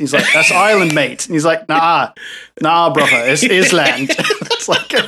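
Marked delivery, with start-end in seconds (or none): 0.3-1.2 awful put-on British accent. Retelling a conversation for viewers: awful fake British accent. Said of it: "That accent was awful".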